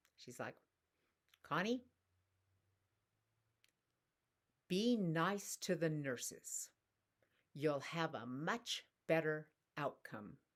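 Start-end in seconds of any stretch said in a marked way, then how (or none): 1.5-10.4 thick, strong put-on New York accent. Quoting a friend's phone advice before a doctor visit: strong new york accent. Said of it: "she's got this very strong New York accent".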